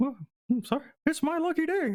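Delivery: very high mouse voice.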